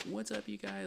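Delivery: put-on falsetto, high-pitched voice. Mocking how an e-boy would greet viewers: real high voice. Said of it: "Like, real high voice".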